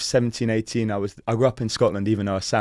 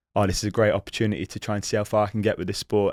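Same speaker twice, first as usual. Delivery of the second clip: ordinary talk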